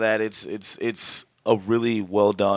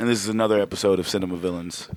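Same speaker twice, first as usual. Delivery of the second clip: plain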